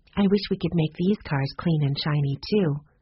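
plain

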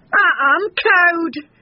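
very high, squeaky, cowed tiny voice. A narrator reads Bull backing away from a fierce dog: squeaking. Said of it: "squeaked Bull".

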